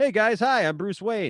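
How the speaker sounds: easygoing, offhand, loud, high-pitched voice. Mocking how the actor played Bruce Wayne: imitating George Clooney as Bruce Wayne. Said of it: "as Bruce Wayne, he'd be like".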